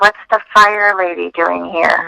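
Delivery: hushed, gossiping half-whisper. Retelling what people at work said when she walked in: imitating people half-whispering. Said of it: "people would whisper".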